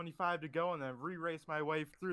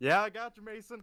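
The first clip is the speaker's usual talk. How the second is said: loud, excited, pitched up, buzzing with excitement; 5 semitones higher, 8 dB louder than usual. Answering a radio check after winning the race, sounding excited. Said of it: "Brett, you sound excited".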